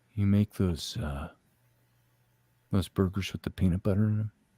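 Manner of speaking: very low, sulky, sullen voice. Retelling the teenage son asking for burgers: imitating a sullen teenage son. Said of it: "his words come out more sullen".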